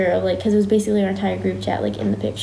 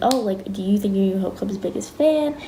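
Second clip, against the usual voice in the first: normal talking voice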